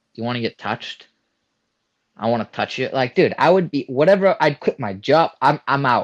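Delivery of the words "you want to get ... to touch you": put-on soft, hushed girl's whisper, leaned in close. Imagining a girl coming up and speaking to him: imitating a girl whispering. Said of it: "a girl came up to me and whispered".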